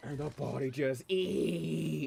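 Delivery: rough, creaky, very slow, long-drawn ee sound. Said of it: "this little high-pitched noise".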